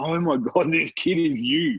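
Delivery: put-on near-tears voice. Retelling what your nan said about the kid, imitating her almost in tears. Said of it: "She was like almost in tears".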